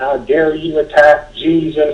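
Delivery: high, acted, restrained yell with stretched words. Retelling how an old lady screamed after throwing water: imitating someone screaming. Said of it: "she starts screaming at me".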